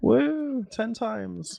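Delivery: high, loud cheer that sounds sarcastic. Cheering that the hype train reached level three: unintentionally sarcastic cheer. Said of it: "That sounded really sarcastic".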